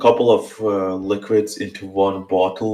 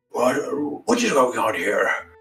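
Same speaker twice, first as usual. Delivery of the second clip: put-on very old, elderly man voice, quieter; 3 semitones higher, 5 dB quieter than usual. Describing a forties-looking man brought back to life, speaking as him: very old man's voice. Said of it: "he's speaking in a very old man's voice".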